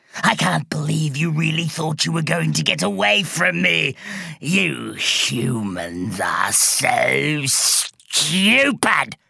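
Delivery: gurgling, rough sea-monster voice, drawn-out "so". Narrator reads Mermaidia speaking as she enters the room, Mermaidia's gurgling voice. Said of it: "she gurgled".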